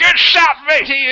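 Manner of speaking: very high-pitched, loud shout. Shouting praise across to a man on another ship: shouting across to another ship. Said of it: "I'll shout across to him".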